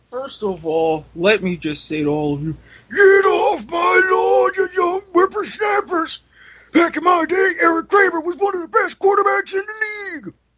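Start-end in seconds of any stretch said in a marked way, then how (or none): 2.9-10.3 put-on very high-pitched cranky old-man grumbling. Speaker making football picks breaks into a bit: put-on old man rant. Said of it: "Now that I have my old man rant over".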